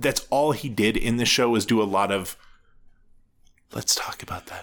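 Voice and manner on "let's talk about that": hushed, soft, breathy, barely voiced whisper. Mimicking an actor's therapist from a show: imitating a whispering therapist. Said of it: "his impression of a therapist seems to just be whispering".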